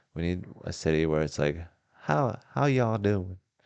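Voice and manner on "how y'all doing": put-on Southern US accent, pitched up. Talking with a friend about New Orleans, slipping into a Southern accent. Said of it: "that a southern accent?".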